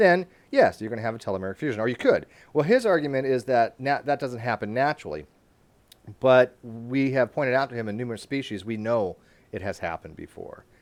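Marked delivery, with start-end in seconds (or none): 0.8-1.8 talking quickly, rattled off fast. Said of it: "Sorry, I'm talking quickly".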